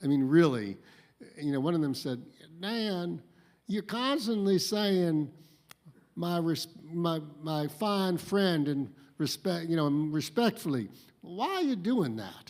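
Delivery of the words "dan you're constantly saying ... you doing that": heavy, thick Southern drawl, slow and high. The speaker retells a colleague's question to him in a thick southern accent. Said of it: "they with the thickest Southern accents".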